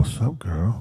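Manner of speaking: playful, flirty, ladies'-man come-on tone. Imagining how another guest's uncle would greet the listener: imitating Uncle Jimmy. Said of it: "he'd be like".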